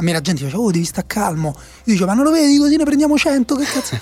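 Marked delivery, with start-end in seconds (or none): 2.1-4.0 mock despairing, exasperated, high, desperate outburst. Speaker retells what he told people urging him to stay calm: retelling a desperate outburst. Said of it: "io ero disperato".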